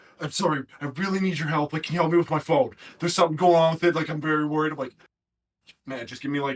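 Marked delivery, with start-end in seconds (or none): 0.2-4.7 frantic, worried, full-panic pleading voice. Retelling the boss coming in to ask for help: imitating boss in full panic. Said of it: "like full panic".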